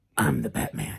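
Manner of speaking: put-on very low, gravelly growling voice.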